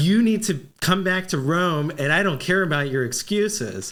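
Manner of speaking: ordinary talk, nothing marked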